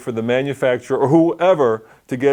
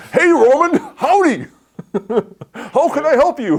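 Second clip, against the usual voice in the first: fake American accent, very high pitch, slow pace; 14 semitones higher than usual. Retelling a phone agent's greeting: imitating a fake American accent. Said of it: "a fake American accent".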